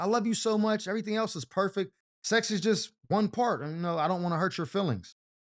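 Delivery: ordinary talk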